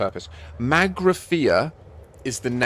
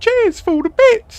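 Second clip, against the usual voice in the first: put-on Pompey (Portsmouth) accent; 11 dB louder than usual. Repeating a child's thank-you for the bits: imitating a little Pompey accent. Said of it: "In a little Pompey accent".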